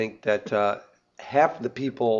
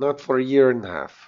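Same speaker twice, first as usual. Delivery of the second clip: loud, raised put-on Russian accent; 2 semitones higher, 5 dB louder than usual. Repeating what a Russian woman said when asked for Polaroid film; Russian accent. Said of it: "But a little more strong".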